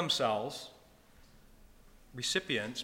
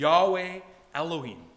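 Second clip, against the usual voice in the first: normal talking voice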